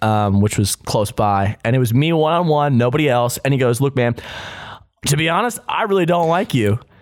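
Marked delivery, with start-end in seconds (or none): none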